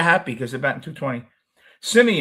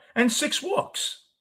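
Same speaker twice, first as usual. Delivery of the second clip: voice cracking, squeaky, way up high; 14 semitones higher, 4 dB quieter than usual. Discussing a pitcher's stats, the speaker's voice cracks. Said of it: "my voice cracked".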